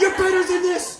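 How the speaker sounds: angry shouting. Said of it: "yells at themselves in anger".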